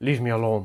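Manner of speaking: cranky, grumpy, irritable tone. Voicing Velorum in a story: Velorum's grumpy voice. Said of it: "in a grumpy voice".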